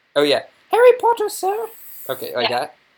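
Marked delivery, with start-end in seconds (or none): 0.7-1.7 very high-pitched, loud put-on character voice. Trying out the Dobby voice for the creature's line, in Dobby voice. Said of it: "You already have the Dobby voice".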